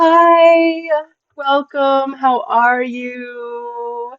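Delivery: very high, put-on fake-nice voice. Speaker demonstrates their very nice work persona greeting someone, in a Stepford work persona voice. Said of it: "Work Savage sounds like this".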